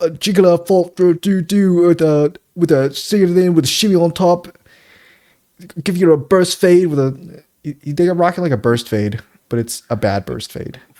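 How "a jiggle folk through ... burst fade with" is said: loud, high fake British accent, nonsense words. Retelling a barber meme: mock British accent gibberish. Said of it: "I'm speaking British".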